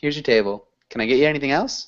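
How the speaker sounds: words blended and run together. Teacher models a waiter's phrases for the class, words run together. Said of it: "all those words are just run together".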